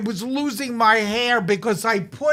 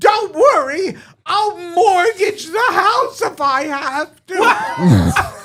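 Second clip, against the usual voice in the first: mock old woman scream, high and drawn-out; 7 semitones higher, 5 dB louder than usual. Retelling what Grandma screamed outside the bathroom door: imitating a scream. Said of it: "Grandma outside the bathroom door was screaming".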